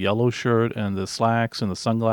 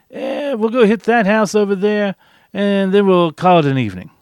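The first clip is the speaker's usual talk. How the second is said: put-on middle-aged New Yorker voice, loud and pitched-up; 10 semitones higher, 8 dB louder than usual. Acting out someone proposing one more house before calling it an evening, imitating a 50-year-old New Yorker voice. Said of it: "He sounded like a 50-year-old New Yorker".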